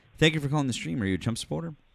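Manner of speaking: high-pitched, mumbled speech. Stream host greets a caller who has just come on, mumbling. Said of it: "you kind of mumbled".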